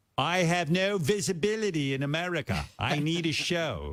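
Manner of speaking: near-perfect put-on English accent, very slow and high. Retelling what someone wanted from a show: put-on english accent. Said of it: "he sounds almost a hundred percent English".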